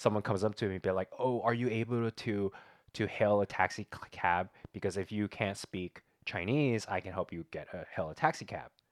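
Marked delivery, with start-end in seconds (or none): none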